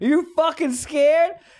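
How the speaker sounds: mock high-pitched yell. Recounting a man taunting them through the car window, retelling his yell. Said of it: "He starts yelling".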